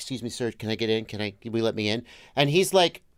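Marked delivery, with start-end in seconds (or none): 0.0-2.0 polite, lower and quieter voice. Retelling asking a Miami driver to let them in, imitating own past polite plea. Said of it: "I'm like".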